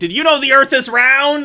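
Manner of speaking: sarcastic yell, very high and loud. Retelling how a man yelled at a lady: mock-sarcastic retold yell.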